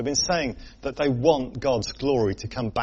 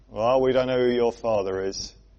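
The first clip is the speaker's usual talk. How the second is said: put-on, acted-out mocking voice; 3 dB louder than usual. Speaker voices what the listeners say to Jesus, imitating a mocking tone. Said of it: "with a little bit of a mocking in their voice".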